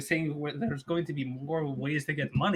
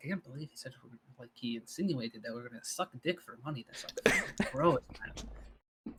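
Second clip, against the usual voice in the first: soft, hushed whisper under the breath; 3 semitones lower, 6 dB quieter than usual. Speaking in character during a game, complaining about a remark: slow whisper. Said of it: "slowly whisper".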